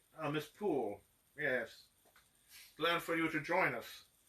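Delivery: fake, icky, villainous put-on German accent. Retelling a shoot, the speaker imitates the director welcoming someone: German accent. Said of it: "That German accent".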